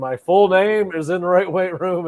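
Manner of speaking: huge, resounding, booming coach voice. Quoting the man greeting him as he walks into his weight room, big booming voice. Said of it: "in his big booming voice".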